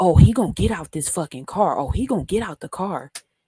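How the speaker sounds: put-on angry woman's voice. Speaker retelling a woman holding a lug wrench by the car, mock-angry threat. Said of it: "And she's like".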